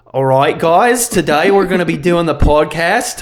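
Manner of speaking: Australian accent, said loudly. Podcast host imagining opening an episode in an Australian accent. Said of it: "I'll be having an Australian accent today".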